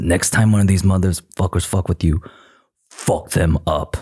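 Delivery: raspy put-on celebrity voice. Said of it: "that's a really good Aquafina impression".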